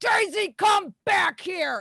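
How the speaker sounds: very high, booming, drawn-out call. Narrating a scene, voicing Wendy calling someone back, Wendy's booming voice. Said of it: "you hear Wendy's voice boom".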